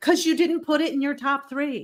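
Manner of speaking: put-on yelling. Retelling what a friend said about the top three: imitating someone yelling. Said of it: "so he's yelling at me".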